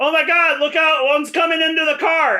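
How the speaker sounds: high-pitched, carrying yell. In the car, calling out so the lady can hear you: yelling. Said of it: "I yell, so the lady can hear me".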